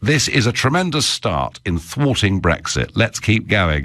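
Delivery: plain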